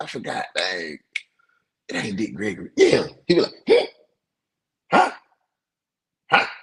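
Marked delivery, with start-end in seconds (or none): 4.9-6.5 put-on very high, cranky, angry old-man voice on "huh". Imitating an old head whose name you forgot, put on an old angry granddaddy voice. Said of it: "He got that old angry granddaddy voice".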